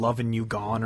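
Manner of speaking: ordinary talk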